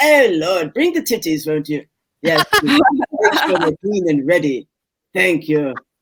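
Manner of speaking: put-on British accent. Speaker shows the voice they use when coming to bed, put-on British accent. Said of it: "I like to be British when I go to bed".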